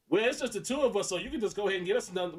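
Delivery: mock snotty, rude tone. Retelling how a girlfriend's request sounded to others: imitating a rude, bitchy tone. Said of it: "Outside of it was like".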